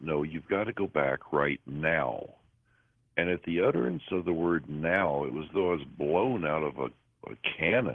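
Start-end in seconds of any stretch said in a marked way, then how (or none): 0.0-2.3 put-on stern tone, slower. Retelling what a voice told them the second time: mock-stern command. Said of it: "a little more stern voice".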